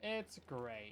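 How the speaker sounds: utmost sarcasm, laid on heavy. Reacting while building in the game: utmost sarcasm. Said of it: "he said with the utmost sarcasm".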